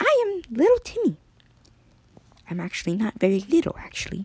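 very high, small, tiny little voice. Narrating a story, the speaker voices Timmy's lines in his small voice. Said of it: "I'm going to have a small voice".

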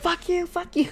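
high-pitched, mock cursing tone.

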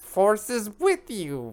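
very high, swooping little wise alien voice. Urging someone who says they can't talk like Yoda, in a Yoda voice. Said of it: "You can totally do it".

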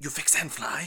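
insect-like voice with broken speech. Player voicing what comes over comms, in a buggish voice with broken Elvish. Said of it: "Like in a sort of like buggish voice".

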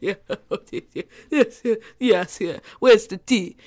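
put-on wealthy older man's voice, chuckling through words. Retelling a night out, doing an older rich guy: imitating an older rich guy's laugh. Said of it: "the older guy, rich laugh".

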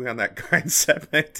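talking through laughter. Trying to say a phrase and cracking up: laughing while talking. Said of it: "I can't even fucking say it without laughing".

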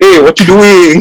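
botched put-on accent that sounds Chinese. Showing others how his attempt at the accent comes out, failed accent sounding Chinese. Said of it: "every time I try to do the accent makes me sound Chinese".

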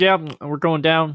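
put-on voice chewing loudly. Imitating Pete Carroll talking to air traffic control: Pete Carroll impression, chewing gum loudly. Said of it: "hear him chewing gum as loud as possible".

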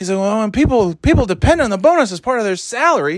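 heated high yell. Retelling a scene where Clark yells at the kidnapped man: imitating Clark yelling. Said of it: "he's yelling at him".

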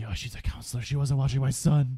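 acted, high, loud, furious, accusing yell. Recapping a film, the speaker acts out Mrs. Voorhees yelling at Alice: mock-angry yell. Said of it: "Voorhees yells at Alice because she's like".

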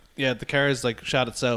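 ordinary talk, nothing marked

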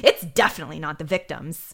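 very emphatic, strongly stressed delivery. Retelling what a lab worker said about a hair: imitating an emphatic delivery. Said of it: "she says it very em-, emphatically".

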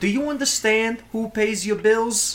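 New Jersey mobster accent. Pitching how a character should talk like an italian mob boss, stereotypical new jersey mob boss. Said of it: "like New Jersey's".

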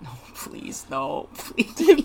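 very slow, hushed, muttered pleading under the breath. Retelling how a friend reacts while watching movies: imitating muttering under breath. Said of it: "just under your breath just go like".

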